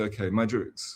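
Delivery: ordinary talk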